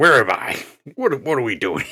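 put-on loud, high-pitched voice with a slight British accent. Redoing the Count Dooku bit: Christopher Lee impression, a little British. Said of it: "Christopher Lee, like".

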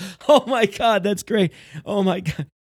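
mock laughing fit, high and loud, gushing out.

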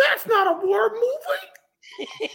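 animated, very high, swooping sing-song voice. Repeating the imitation of a friend after praise: Marco impression. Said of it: "the best Marco impression I've ever heard".

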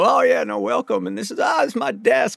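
bad, way-off put-on voice, rough and high. Retelling showing interviewers around a set: terrible Bill Clinton impression. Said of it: "I did this terrible Bill Clinton impression".

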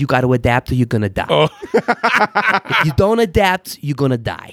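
put-on heavy New York accent, laid on thick. Speaker quoting a guy who talked about business strategy: thick New York accent. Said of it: "he had this thick New York accent".

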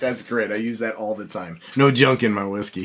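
plain

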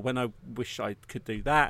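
ordinary talk

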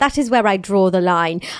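put-on British accent. Reading a celebrity's quote from a magazine: Millie Bobby Brown accent. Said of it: "I'm gonna do her accent".

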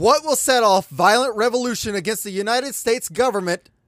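put-on very high, old-time radio announcer voice. Raising a question in a group discussion, old-school radio host voice. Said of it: "Why do you sound ... like an old school radio host".

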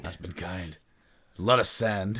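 mock gravelly deep voice. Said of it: "you speak kinda gravelly".

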